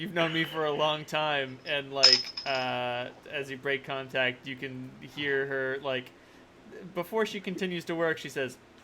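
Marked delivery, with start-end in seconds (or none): none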